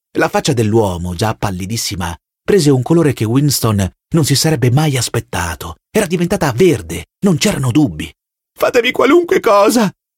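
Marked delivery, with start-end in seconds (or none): 8.5-9.9 crying out loudly, shouting. A man pleads with an officer, shouting.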